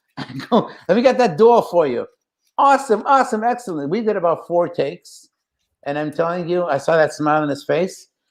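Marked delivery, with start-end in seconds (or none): 0.9-2.1 put-on Brooklyn accent, higher pitch. Retelling the line he delivered during a take, in a Brooklyn accent. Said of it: "can you give us one of those uh, Brooklyn accents?".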